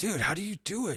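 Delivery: normal talking voice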